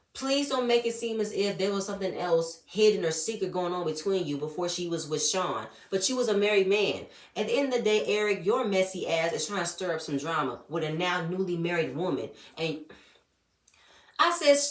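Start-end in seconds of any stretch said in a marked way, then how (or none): none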